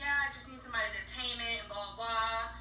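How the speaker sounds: ordinary delivery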